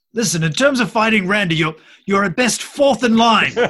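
loud, high calling out. A character rolling out of the dragon's path shouts at it. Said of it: "He shouts out at the dragon".

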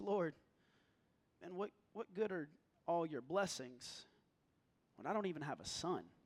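dejected, disheartened, disappointed, let-down tone. Acting out Abram's reply to God's promise: Abram's disappointed voice. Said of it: "you can almost feel it in his voice".

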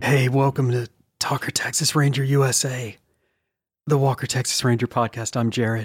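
hushed voice. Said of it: "We don't actually have to whisper".

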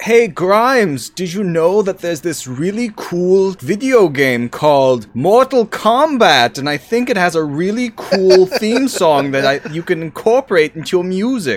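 put-on very high, shrill, loud German accent. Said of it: "your impression of [name]'s voice is, like, super German".

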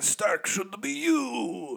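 croaky, raspy, high alien voice, "you" drawn out. Retelling a character's father's dying words, sounding like the Star Wars fly guy. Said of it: "I think I just sounded like the guy from Star Wars Episode 1".

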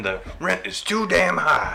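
rough, raspy voice pitched very high. Quoting a mayoral candidate's slogan: James McMillan impression.

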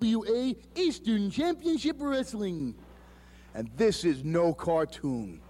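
goofy cartoon moose voice with swooping pitch. Introducing a wrestling championship, in a Bullwinkle cartoon voice. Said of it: "he did sound pretty good as like a cartoon voice".

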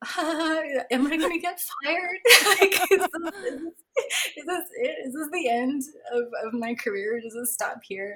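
put-on nervous laughing. Retelling laughing alongside a woman in the fridge, fearing being fired: retelling nervous laughter. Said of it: "all also nervously laughing".

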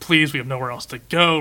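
acted, put-on pleading, begging voice. Recounting a scene where a man begs another man, imitating someone begging. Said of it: "starts like begging him".

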